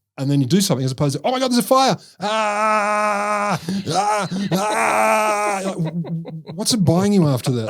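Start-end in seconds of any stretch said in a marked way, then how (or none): 1.3-5.6 very slow, high panicked screams, "ah"s stretched. Mocking people in a theater fire who keep yelling: imitating people screaming in panic. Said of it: "to be screaming the whole time".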